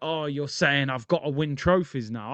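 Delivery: plain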